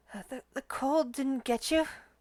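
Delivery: faint, high, ghostly half-whispered voice. Narrator voices a voice heard half-whispering in the scene, in a half-whisper. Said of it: "a voice whisper".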